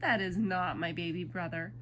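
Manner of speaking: usual speaking voice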